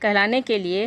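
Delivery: plain reading voice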